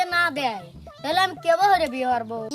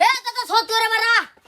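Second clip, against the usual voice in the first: much too loud, louder and higher calling out; 6 semitones higher, 5 dB louder than usual. Calling out for father and grandfather, talking too loud. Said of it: "আস্তে কথা কও".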